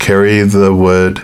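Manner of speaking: ordinary talk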